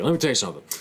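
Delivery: high, indignant, angry dad voice. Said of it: "he just gets all mad about it".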